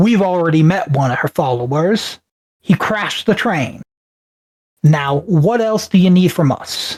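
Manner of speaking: grand, big, resonant character voice. Narrating the scene, the storyteller voices Philip answering the group: booming Philip voice. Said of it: "with a booming voice".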